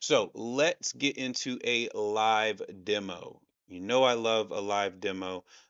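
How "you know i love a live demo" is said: deadpan, dry, sarcastic delivery. Announcing a live demo about Bluetooth: sarcastic. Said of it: "that is me being sarcastic".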